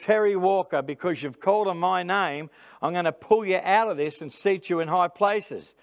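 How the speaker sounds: ordinary delivery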